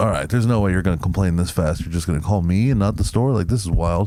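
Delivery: ordinary talk, nothing marked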